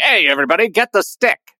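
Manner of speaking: put-on 1930s old-time newsreel narrator voice. Imagining how Steve would talk in 1940, Steve as 1930s newsreel voice. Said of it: "He's turned into a 30s newsreel voice".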